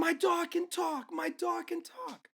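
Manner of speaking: frantic scream, very high pitched and very slow. Telling a story about a crazy old lady running out at night, imitating a frantic scream.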